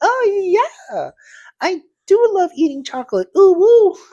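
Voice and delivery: put-on loud, very high, swooping anime girl voice. Joking about someone disguised as an anime girl VTuber: imitating an anime girl VTuber. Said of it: "disguising themselves as this anime Japanese girl".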